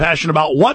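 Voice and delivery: ordinary talk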